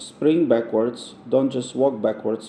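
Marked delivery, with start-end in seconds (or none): none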